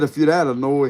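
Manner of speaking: usual speaking voice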